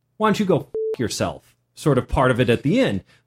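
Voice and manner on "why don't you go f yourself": smug, cocky, self-satisfied tone. Retelling an inner reaction at the end of the encounter: imitating own smug retort. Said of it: "the smug".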